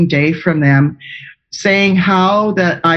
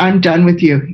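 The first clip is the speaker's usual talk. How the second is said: imitated disgusted tone. Retelling a healthcare professional dismissing a patient: imitating disgust. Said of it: "put her hands back up in the air with disgust and said".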